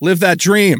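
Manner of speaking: sarcastic, sardonic tone. Responding with mock praise to a point about paying soldiers: sarcastic. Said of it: "I was being sarcastic".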